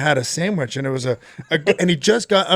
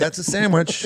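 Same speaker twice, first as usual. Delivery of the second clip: usual speaking voice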